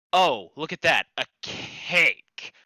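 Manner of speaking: very slow, disgusted, repulsed drawl. Showing how changing intonation alters a word: disgusted tone. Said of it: "I can make myself sound disgusted at the word cake".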